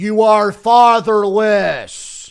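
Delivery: loud put-on American accent on "fatherless". Asked to say a word in an American accent, trying it: American accent. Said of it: "say fatherless in an American accent".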